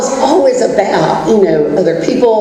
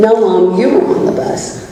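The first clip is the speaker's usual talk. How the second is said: normal talking voice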